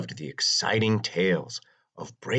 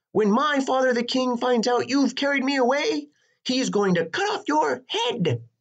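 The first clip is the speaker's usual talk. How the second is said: very high, shrill, raving, ranting shout; 4 dB louder than usual. Narrator reads the princess shouting at Herbert the dragon: ranting and raving. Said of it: "she began to rant and rave".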